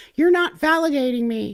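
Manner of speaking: put-on very high, whining voice. Mocking people who love the word invalidate, in a mock whiny voice. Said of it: "They just sound whiny".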